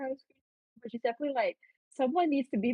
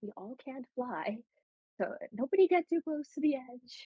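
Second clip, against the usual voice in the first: whispered speech. Warning the party members in character to keep away from the cliff edge: whispering. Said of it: "she's gonna whisper it so that Cornelius can't hear her".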